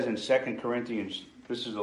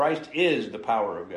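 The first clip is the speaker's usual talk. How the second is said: the word "is" hit hard, the rest level. Explaining a scripture verse about Christ, with stress on the word is. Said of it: "emphasize the word is".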